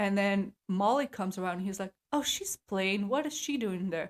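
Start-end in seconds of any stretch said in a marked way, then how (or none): 2.1-4.1 put-on Eastern European accent. Retelling a dad watching Southern Charm, imitating his Eastern European accent. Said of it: "My dad is like so Eastern European".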